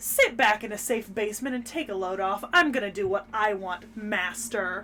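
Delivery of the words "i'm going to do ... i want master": ordinary talk, nothing marked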